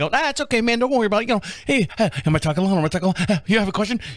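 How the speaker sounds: put-on rapid talking. Retelling talking with a studio guest, acting out his own rapid talk. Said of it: "he just couldn't keep up the pace".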